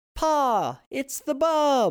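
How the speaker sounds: very high, very slow, swooping drawn-out call. A boy throws himself into Pa after running up the driveway, shouted. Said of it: "the boy shouted".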